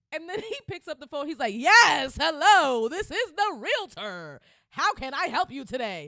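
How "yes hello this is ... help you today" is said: literal screaming at full blast, very loud. Retelling a realtor answering the phone in a movie: imitating Alvin screaming. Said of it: "He was literally screaming".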